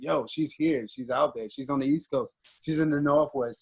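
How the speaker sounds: ordinary delivery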